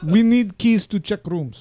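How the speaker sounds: put-on Russian accent, private eye voice. Voicing the Russian private eye character for the player, put-on Russian accent. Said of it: "The Russian. ... I'm a private eye".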